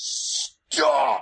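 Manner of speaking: single word, called out. With both hands against the door, he calls out to you: yelling. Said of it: "And he yells".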